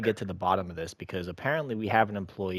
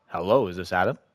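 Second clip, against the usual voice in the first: put-on voice, noticeably deeper than normal; 6 dB louder than usual. Calling Adam while posing as someone else, in a put-on deeper voice. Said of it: "I'm gonna do deeper voice".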